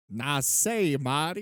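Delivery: put-on Southern accent. Imitating an actor calling his director in a Southern accent: imitating De Niro's Southern accent. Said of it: "constantly talking to you in a Southern accent".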